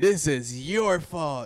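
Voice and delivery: high-pitched shouting. Recalling fans confronting a man in his booth at the game, retelling a yell. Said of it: "we were already yelling".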